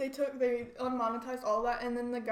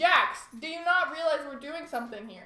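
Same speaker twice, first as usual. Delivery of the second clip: shouting, higher and louder; 4 semitones higher, 6 dB louder than usual. Calling out to Jax, who is messing up the audio: yelling. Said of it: "Stop yelling at him".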